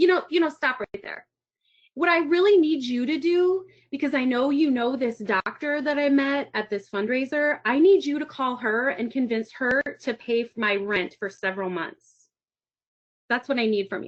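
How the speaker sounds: ordinary delivery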